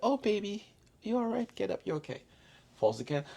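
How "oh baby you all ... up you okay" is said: very high-pitched, tender, caring, nurturing mother voice. Acting out how a mother reacts when a child falls: imitating a nurturing mother. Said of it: "the woman be like".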